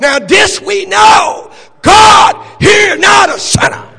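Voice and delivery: slow, high, loud shouted proclamation.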